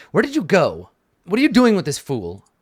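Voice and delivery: annoyed, irritated, high and swooping pitch. Voicing an annoyed character who finds someone gone: annoyed character voice. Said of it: "he looks, like, annoyed".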